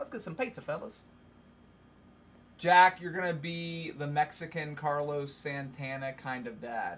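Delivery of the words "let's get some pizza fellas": rapid, scattershot, sporadic patter. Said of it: "he talks kinda fast and sporadic".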